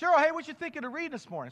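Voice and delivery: shouting loudly, high-pitched.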